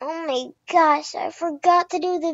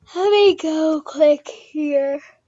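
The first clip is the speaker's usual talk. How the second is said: speaking through a yawn. Setting up a video for viewers, then apologizing: yawning. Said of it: "Sorry, I'm yawning".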